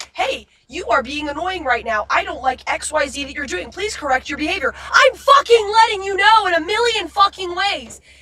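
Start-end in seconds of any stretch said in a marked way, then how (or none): 0.1-4.7 blunt, flat-out honest, matter-of-fact tone. Showing how blunt honesty would sound: imitating blunt honest talk.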